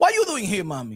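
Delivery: deep, low put-on Spanish accent. Told to bring a spanish accent, the speaker confronts a woman: spanish accent. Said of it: "bring that Spanish accent".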